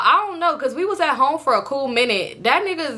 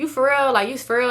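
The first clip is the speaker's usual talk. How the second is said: usual speaking voice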